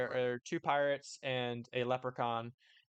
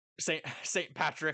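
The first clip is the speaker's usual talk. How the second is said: ordinary talk, nothing marked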